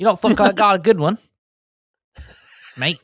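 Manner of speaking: clumsy, bad fake Australian accent, pitched very high. Showing off their Australian accent to the other speaker, bad Australian accent. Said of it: "Just turn into English for a person".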